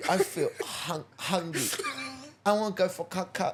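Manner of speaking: put-on, high, babyish voice. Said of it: "I know a baby voice come out there".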